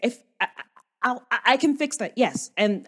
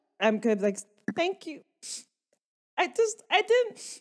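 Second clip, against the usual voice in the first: sniffling, overwhelmed, much higher, quieter; 9 semitones higher, 3 dB quieter than usual. A character after a ruckus, answering someone who asks about it, sniffling, overwhelmed. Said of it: "I'm not sniffling because I'm crying".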